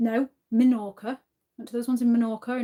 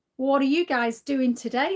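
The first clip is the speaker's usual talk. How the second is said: attempted, put-on Australian accent; 3 semitones higher than usual. Greeting viewers in Sydney, Australia, in an attempted Aussie accent. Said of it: "Look at me trying to do an Aussie accent".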